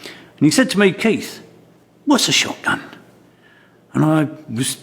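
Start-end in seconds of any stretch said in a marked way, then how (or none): 0.9-2.8 put-on Somerset-accented voice. Retelling a first meeting with a coaching mentor: Somerset accent imitating Christopher Craddock. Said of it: "say it in somewhat of a Somerset accent".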